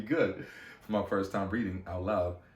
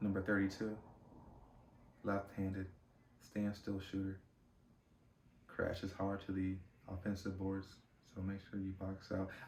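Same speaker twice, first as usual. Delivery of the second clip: feeble, weak, barely audible reading voice; 10 dB quieter than usual. Retelling reading a scouting report aloud to the team: imitating own weak voice. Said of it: "I sounded just like that, hella weak, super weak".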